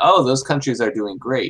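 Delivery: play-acted ironic, sarcastic tone. Speaker retelling what he said to her earlier, retelling a sarcastic remark. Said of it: "And I sarcastically said".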